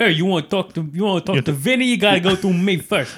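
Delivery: put-on Italian gangster accent. Imagining being in a prison gang, the speaker does an Italian mobster accent. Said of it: "I feel like you'd go full Italian in prison".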